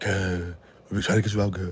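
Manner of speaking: put-on woman's voice. Reading out a letter from Dominique, in a Dominique voice. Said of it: "I don't know why I'm talking in her voice".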